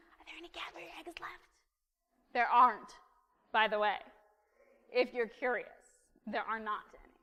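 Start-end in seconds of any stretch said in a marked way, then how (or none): 0.2-1.5 fast, high-pitched whisper. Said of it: "being like".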